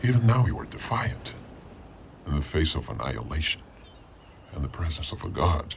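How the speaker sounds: very low, very deep, god-like kingly voice. A character addresses the brave king in a film scene, in a deep voice. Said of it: "He's like the king of a deep voice".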